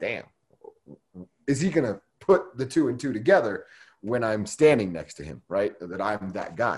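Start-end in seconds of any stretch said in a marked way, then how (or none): none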